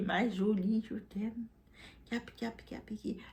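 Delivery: mock, very slow, sweet-talking, charming little voice. Retelling how a man talked to charm a woman: imitating a charming seductive voice. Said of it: "cette petite voix pour la charmer".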